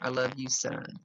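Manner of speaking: normal talking voice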